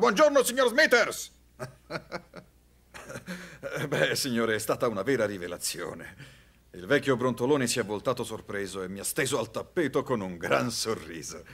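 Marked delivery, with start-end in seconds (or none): 0.0-1.3 much higher, much louder bellowed shout. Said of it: "Con una voce che si sentiva fino a New York ho urlato ancora".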